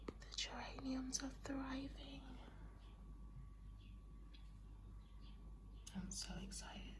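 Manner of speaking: soft, breathy whisper, barely voiced. Showing plants at 5 a.m. before working out, the speaker is whispering. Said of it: "I'm whispering because it's 5 a.m".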